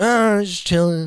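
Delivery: acted awkward, evasive voice. Retelling how the group answered a stranger in the woods: imitating an awkward evasive reply. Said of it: "not making eye contact, going".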